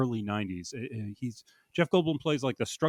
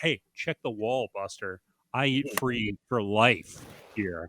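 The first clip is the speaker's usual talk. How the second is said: put-on offended, indignant, affronted tone; 2 semitones lower than usual. Retelling a movie scene of ordering at Sbarro: imitating an indignant character. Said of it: "she gets very indignant, and she's like".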